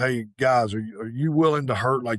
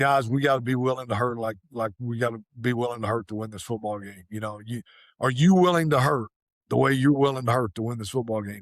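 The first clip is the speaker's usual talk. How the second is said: usual speaking voice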